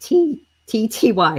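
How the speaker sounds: very slow, very drawn-out, breaking voice. Repeating a giveaway hashtag letter by letter for viewers, voice cracking. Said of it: "my voice just cracked".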